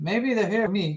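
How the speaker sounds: plain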